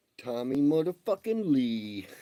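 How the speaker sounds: booming, very loud, high-pitched shout. Telling listeners about weekend plans with his kids, yelling. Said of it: "Forgive me for the yelling".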